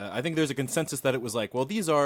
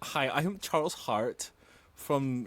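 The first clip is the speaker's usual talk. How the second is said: put-on, fake German accent; 4 dB quieter than usual. Committing to a bit and introducing himself, fake German accent. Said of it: "I'm German now".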